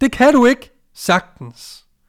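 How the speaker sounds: loud, high, slow shout.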